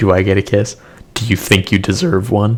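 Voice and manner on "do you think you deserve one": voice cracks and breaks. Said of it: "Excuse me, voice crack".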